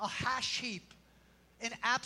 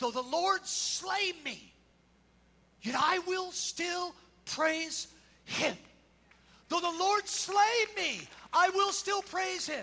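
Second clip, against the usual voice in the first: loud, rising, crying-out voice; 6 semitones higher, 4 dB louder than usual. Retelling the story of Job after his friends mock him, crying out loudly. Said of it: "cries out in this loud voice".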